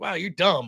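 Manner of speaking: imitated frustrated voice. Retelling own remark to an opponent in a debate: imitating own frustrated tone. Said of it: "the tone of my voice changed".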